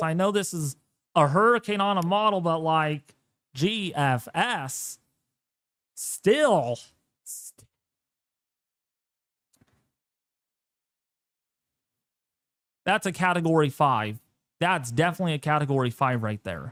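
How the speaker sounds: talking while cracking up, laughing through the words. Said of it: "Sorry, I'm laughing at this".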